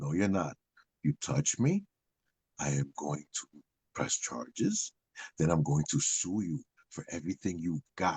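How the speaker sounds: very low, quiet, calm voice. Retelling what the speaker said to a man screaming in their face, retold calm, low voice. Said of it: "I kept my voice low".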